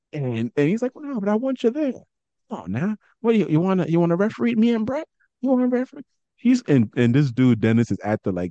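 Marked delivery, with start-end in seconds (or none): 0.9-6.0 soft-spoken impression, much higher pitch, faster pace. Retelling him urging the old wrestler to come to the show, in Terry Funk's soft-spoken voice. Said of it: "Terry Funk got like this soft-spoken voice".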